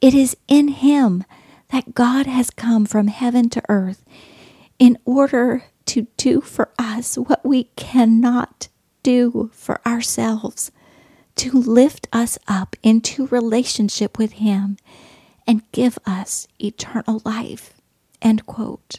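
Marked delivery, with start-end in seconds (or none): 0.0-17.7 choked-up voice, emotion catching in the throat. Reading a quoted passage about Jesus aloud, choked up. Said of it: "I got a little choked up there".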